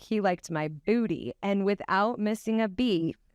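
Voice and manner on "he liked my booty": ordinary delivery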